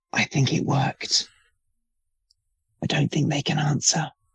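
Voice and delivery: soft, hushed whisper. Whispering to a companion in a scene after a failed call: whispering. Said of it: "I'll whisper into Orion's ear".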